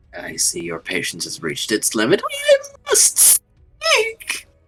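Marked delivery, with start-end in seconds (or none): 2.2-4.4 very high-pitched voice, rising. A player speaks in character to the group, in a high-pitched voice. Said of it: "whenever you do that high pitched voice".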